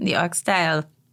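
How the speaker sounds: bad put-on Caribbean accent. Talking about a Caribbean fusion oxtail dish, bad put-on Caribbean accent. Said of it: "my whack oxtail accent just now".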